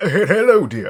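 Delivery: posh aristocrat voice, very high and loud. A raven with mimicry ability speaks in the aristocrat's voice. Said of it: "speaks in the aristocrat guy's voice".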